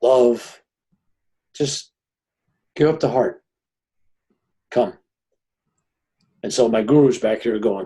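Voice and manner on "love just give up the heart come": soft, loving, gentle, angelic feminine voice. Quoting a voice heard in a blaze of light: imitating a soft, loving feminine voice. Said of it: "most softest, loving, angelic, divine, feminine, definitely feminine voice".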